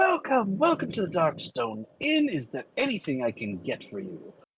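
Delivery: outgoing, gregarious, high sing-song voice. Narrating a tavern scene, the innkeeper greets a new dwarf customer: Leda's gregarious innkeeper greeting. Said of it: "She's very gregarious".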